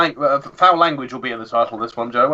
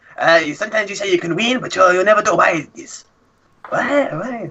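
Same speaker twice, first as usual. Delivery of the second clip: put-on Italian accent, pitched up; 6 semitones higher than usual. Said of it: "ask that question in an Italian accent".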